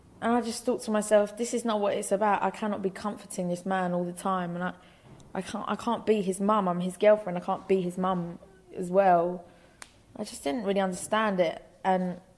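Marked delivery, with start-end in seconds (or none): none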